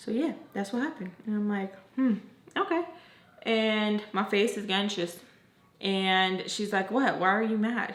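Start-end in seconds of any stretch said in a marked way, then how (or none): 6.9-7.9 put-on irritated voice. Retelling the daughter's reaction to the speaker's anxious face, imitating an annoyed tone. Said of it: "the tone in her voice, like annoyed".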